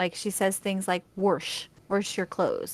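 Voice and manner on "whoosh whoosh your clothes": put-on slight sing-song Wisconsin accent, Wisconsin vowel in "wash". Speaker quotes how their mom says a phrase: slight Wisconsin accent. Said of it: "this very slight Wisconsin accent".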